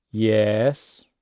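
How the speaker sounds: exasperated yes, dropping then climbing back up. Explaining the third tone, the exasperated teacher's tone: exasperated fall-rise on yes. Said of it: "your voice goes down a bit and then up".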